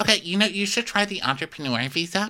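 smug, snooty, high-pitched condescending tone. Speaker acts out their own earlier suggestion to another person, retelling a snotty suggestion. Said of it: "suggested it in a really snotty tone".

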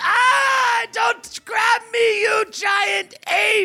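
very high, drawn-out, shrieking damsel scream. Voicing a screaming heroine grabbed by a giant ape: screaming damsel in distress. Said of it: "screaming heroin wizard".

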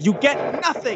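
flung out forcefully at high pitch. Imagining a scene aloud, doing Gene Wilder screaming: Gene Wilder screaming. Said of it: "Gene Wilder looks down and he, he screams".

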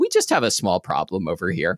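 mock utterly unruffled, composed, very calm, swooping sing-song. Retelling how she told a customer on a support call: imitating Lori speaking very calmly. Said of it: "very calmly to the customer".

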